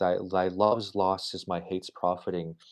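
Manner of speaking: normal talking voice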